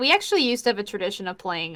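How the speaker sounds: normal talking voice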